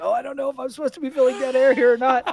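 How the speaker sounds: mock frantic whispering. Retelling what was said while the stream was muted: imitating own frantic whisper. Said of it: "you'll hear me frantically whispering".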